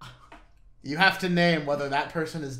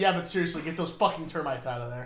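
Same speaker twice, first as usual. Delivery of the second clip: normal talking voice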